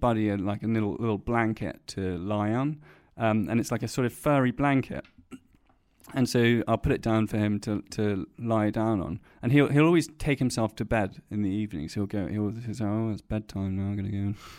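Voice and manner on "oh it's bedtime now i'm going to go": mumbled dog voice, much lower and quieter. Owner voicing the dog taking himself to bed, mumbled dog voice. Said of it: "I love how he mumbles it as well".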